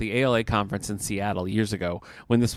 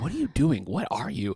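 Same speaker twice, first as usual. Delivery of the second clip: put-on whisper, higher pitched; 5 semitones higher than usual. Retelling a friend asking a question backstage: imitating Maddie whispering. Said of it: "whispering backstage".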